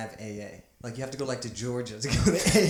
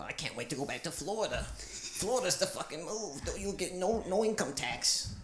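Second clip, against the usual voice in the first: mock New Jersey accent, higher and quieter; 5 semitones higher, 7 dB quieter than usual. Imitating people from Jersey who talk about Florida: imitating a New Jersey accent. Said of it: "Since you brought up the accent".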